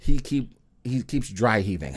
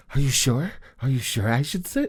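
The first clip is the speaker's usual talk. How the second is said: mock boozy, drunk man voice; 2 semitones higher than usual. Retelling what a drunk man asked in the bathroom: imitating a drunk friend. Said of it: "The impression is hilarious".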